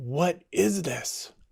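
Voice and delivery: fierce, demanding voice. Telling a story, the speaker acts out the Korean teacher's question, retelling it fiercely. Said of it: "said a little more fiercely".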